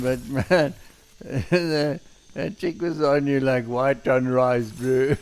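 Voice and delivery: talking while still laughing through the words. Commenting on a game character chasing someone, laughing while talking. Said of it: "Sorry for laughing".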